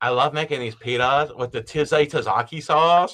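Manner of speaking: put-on effeminate voice and pitch. Mocking a guy in a pita-making video: mock effeminate voice. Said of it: "he's got the most effeminate voice. He's like".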